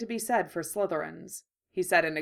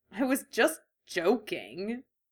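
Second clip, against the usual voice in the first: slow, mild, joking, good-natured grumble; 3 semitones higher than usual. She answers him after his teasing remark, grumbling good-naturedly. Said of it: "Ginny grumbled good-naturedly".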